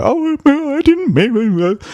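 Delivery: very high, slow, teary, acted-out weepy voice. Describing how they react after being told off, act out their reply: imitating a weepy reply. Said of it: "get a bit weepy and go".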